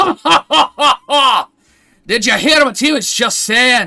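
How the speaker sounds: put-on very high, very loud drunken cackling laugh. Voicing a drunk dwarf who claps a player's shoulder: drunk laughing dwarf. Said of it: "a very drunk dwarf".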